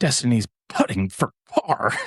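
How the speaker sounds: cartoon cat voice, p popped in putting and par. Showing how plosives sound on the microphone: Sylvester voice. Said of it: "It's like Sylvester from the Looney Tunes".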